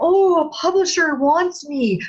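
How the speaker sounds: starstruck gushing voice, high-pitched and slow. Warning authors against falling for publishers, imitating a starstruck author. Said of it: "Don't just get star-eyed".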